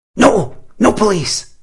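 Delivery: very high, panicked outburst. A girl cries out at Tom in alarm, panicked outburst. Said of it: "The girl's voice reflected the panic in her eyes".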